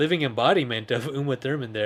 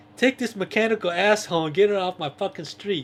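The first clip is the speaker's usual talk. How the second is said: mock, high, raised yell; 7 semitones higher than usual. Retelling how a man yelled at him in the driveway, imitating the yell. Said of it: "when he yells at him".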